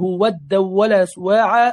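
ordinary delivery

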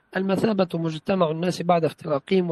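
normal talking voice

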